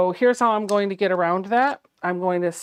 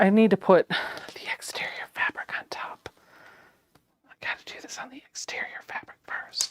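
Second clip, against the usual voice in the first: hushed, soft whispered running commentary; 6 dB quieter than usual. The speaker narrates sewing a zipper onto fabric, whispering. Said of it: "I don't know why I'm whispering".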